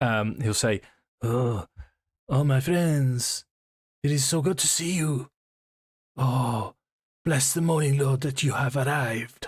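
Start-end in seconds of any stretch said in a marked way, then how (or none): 1.2-9.5 put-on French accent, high, slow, drawn out. Speaker trying out a character voice for the group, attempted French accent. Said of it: "I'm aiming for French".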